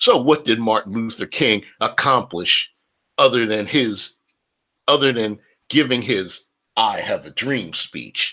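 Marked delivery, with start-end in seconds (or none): none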